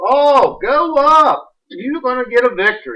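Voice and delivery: slow sarcastic mockery. Acting out Micaiah's answer to the king: sarcastic Micaiah voice. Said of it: "He's being sarcastic".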